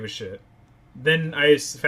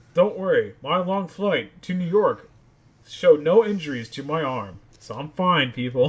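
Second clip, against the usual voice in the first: put-on whiny baby voice. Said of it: "baby voice".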